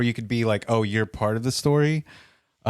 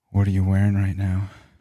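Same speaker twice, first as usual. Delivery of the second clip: sultry, seductive voice; 2 semitones lower than usual. Showing an audition voice for an audio story job: sultry audition voice. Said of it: "can I do my voice right now?".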